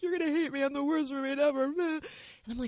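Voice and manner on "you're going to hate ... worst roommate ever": crying, high, rushed, tearful, panicked voice. Retelling a roommate waking her at three a.m.: imitating someone crying. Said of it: "She's crying".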